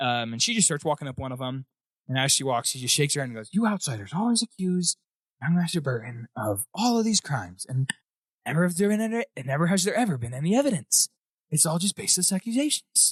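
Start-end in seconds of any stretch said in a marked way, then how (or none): 3.5-13.1 rambling on, talking to herself. Voicing a servant leading the players upstairs: muttering to herself. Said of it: "She's kinda just talking to herself".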